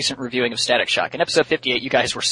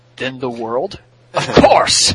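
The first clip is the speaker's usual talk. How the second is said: big, loud, slow put-on character voice; 6 dB louder than usual. The speaker delivers a line in their best Bison voice. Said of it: "In my best Bison voice".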